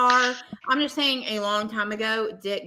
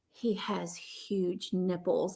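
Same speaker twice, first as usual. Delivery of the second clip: very slow, near-whispered mutter, almost to himself; 3 semitones lower, 10 dB quieter than usual. Retelling what Dustin said upon finding out it was Joe: imitating Dustin whispering. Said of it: "almost whispers to himself".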